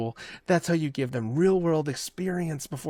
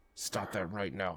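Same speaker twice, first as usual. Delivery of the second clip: spoken through gritted teeth, lower and quieter; 6 semitones lower, 12 dB quieter than usual. Retelling how a parent scolded in public: imitating gritted-teeth scolding. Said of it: "that was the gritted teeth talk".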